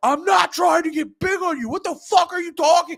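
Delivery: very high, furious, angry shouting. Retelling an argument with a guy who hit him, retelling his own yelling. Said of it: "I'm yelling at him like".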